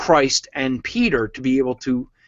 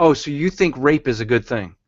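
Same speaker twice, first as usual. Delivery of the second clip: put-on sarcastic retort voice, mock sarcasm. Speaker recounts answering folks at Bible-thumping hangouts, retelling own sarcastic line. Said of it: "this is just my sarcasm".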